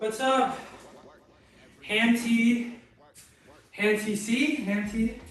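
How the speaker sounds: out of breath. Greeting someone right after a deadlift working set, out of breath. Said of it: "I'm very out of breath".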